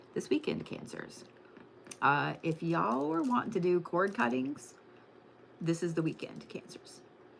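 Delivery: soft, light half-whisper, very quiet. Telling Cancers about their magical weekend, whispering a little. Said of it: "I'm gonna whisper a little bit".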